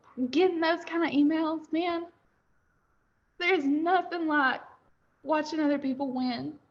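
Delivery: crying while talking. Talking about hearing from people who succeeded, crying while talking. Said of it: "I don't know why I'm crying".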